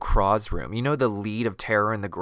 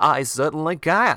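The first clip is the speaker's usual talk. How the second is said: bad half-British mid-Atlantic accent, loud and high; 6 semitones higher, 5 dB louder than usual. Quoting a girl's reply in a badly acted film, in a terrible mid-Atlantic half-British accent. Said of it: "she has like a terrible like mid-Atlantic half British accent".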